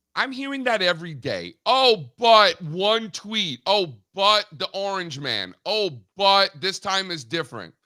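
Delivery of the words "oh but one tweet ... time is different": plain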